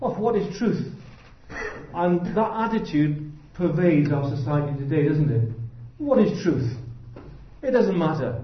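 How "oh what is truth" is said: mock-dismissive tone at a higher pitch. Speaker retells Pilate's question to Jesus: mock-dismissive, imitating Pilate. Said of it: "he said it rather dismissively".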